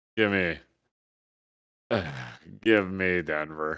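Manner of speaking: annoyed, exasperated words said on a sigh. Giving a betting pick with an exasperated sigh. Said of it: "The exasperation in that fucking sigh".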